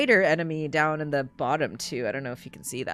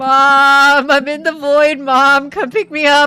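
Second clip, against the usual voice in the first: mock panic, playfully scared, higher and louder; 10 semitones higher, 13 dB louder than usual. Moving through a strange void in a game, calling for mom: playfully scared. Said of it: "I'm scared!".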